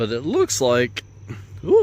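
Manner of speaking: cracking voice, breaking mid-phrase. Speaker describing a tree's condition, voice suddenly cracking. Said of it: "my voice just cracked".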